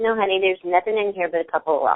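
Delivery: plain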